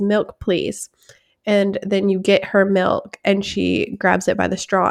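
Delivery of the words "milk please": imitated toddler voice, quiet and sweet, quieter. Retelling how a year-and-a-half-old daughter asks for milk: imitating a toddler saying it quietly and sweetly. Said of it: "she says it very sweetly".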